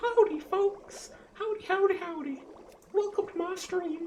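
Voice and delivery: squeaky, very high, slow, drawn-out puppet voice. Imagining a hand puppet greeting the stream: hand puppet voice. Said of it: "that can just put on my hand and be like".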